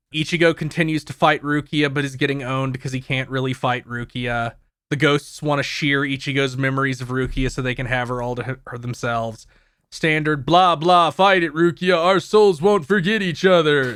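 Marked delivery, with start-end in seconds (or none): 11.1-13.9 tough, gruff action-hero delivery. Summarizing an episode, quoting a hero's speech: Duke Nukem voice. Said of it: "Why does he sound like Duke Nukem?".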